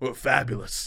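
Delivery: put-on tough voice, "fabulous" said tough. Asking if a dad said it like this: imitating a tough "fabulous". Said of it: "a tough".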